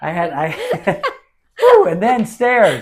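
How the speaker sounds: loud, gasping out between laughs, out of breath.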